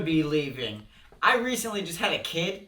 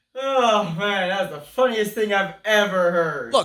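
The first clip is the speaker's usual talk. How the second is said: overacted, way overdone fake amused reaction; 4 dB louder than usual. In a sketch, reacting to news of a grandma's death with overdone fake amusement. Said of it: "you're overdoing it a little bit".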